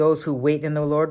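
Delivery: ordinary delivery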